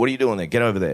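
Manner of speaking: mock mild half-yell, shouted. Retelling yelling at a group member in the wrong place: imitating own yell. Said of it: "I just yelled at him".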